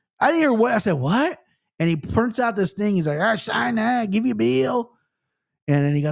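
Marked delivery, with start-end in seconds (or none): 3.2-4.9 put-on thick backwoods country drawl, slow and high. Retelling a toll man explaining he will send a bill, imitating a thick country accent. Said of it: "The most country back ass accent".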